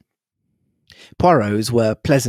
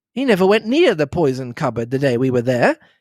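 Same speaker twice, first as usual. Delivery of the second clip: plain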